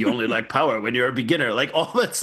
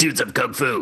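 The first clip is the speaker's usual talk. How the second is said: fake mid-Atlantic dubbed-film accent. Opening the show with its title: Shaw Brothers dub accent. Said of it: "God, I wish I had that accent".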